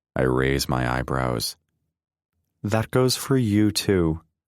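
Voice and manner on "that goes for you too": sharp, high, snappy delivery. Reading a card game scene aloud, a character replies: snapping back. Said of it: "Lee snaps back".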